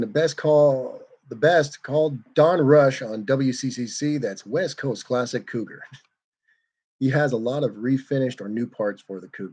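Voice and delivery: ordinary talk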